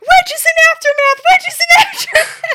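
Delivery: excited screaming. Recalling shouting the news into the garage, retelling excited screaming. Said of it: "and I start screaming".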